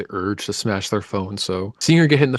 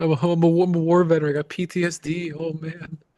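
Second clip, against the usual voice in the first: put-on pitiful old man voice, higher pitch; 7 semitones higher than usual. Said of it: "trying to pretend like".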